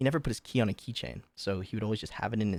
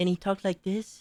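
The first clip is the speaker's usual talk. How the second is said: super high-pitched, way-up-top voice; 10 semitones higher, 4 dB louder than usual. Speaker describing someone who left food trash on his desk: imitating his super high voice. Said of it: "He had a super high voice".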